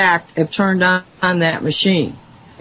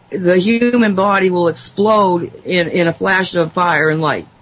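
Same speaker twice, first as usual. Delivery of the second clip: normal talking voice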